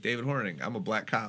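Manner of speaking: ordinary delivery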